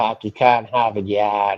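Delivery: Boston accent, put on for show. Asked to show it, demonstrating a put-on boston accent. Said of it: "sound like I'm from Boston".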